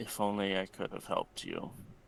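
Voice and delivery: very light, hushed murmur under the breath. Narrator voicing Marcus after a roll, very lightly under his breath. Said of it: "very lightly under his breath says".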